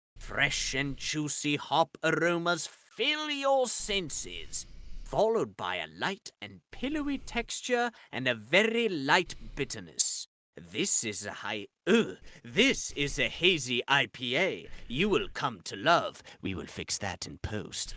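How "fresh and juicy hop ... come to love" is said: sing-song, put-on British accent in advert-style read. Reading a beer description aloud from a can: British accent. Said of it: "now that I did in the British accent".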